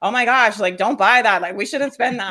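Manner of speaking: panicky inner voice.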